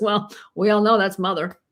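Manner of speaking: mock offhand, plain, matter-of-fact delivery. Retelling a dinner remark by Peter Levine: imitating Peter Levine, matter-of-fact. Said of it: "Like the most matter of fact".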